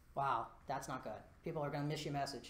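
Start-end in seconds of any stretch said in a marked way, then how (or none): none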